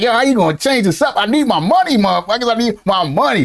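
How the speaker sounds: ordinary talk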